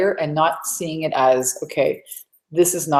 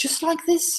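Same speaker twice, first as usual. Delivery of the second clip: switched into English accent; 13 semitones higher, 5 dB quieter than usual. Retelling coming back from a hike speaking only one way: put-on English accent. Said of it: "I came out with an English accent".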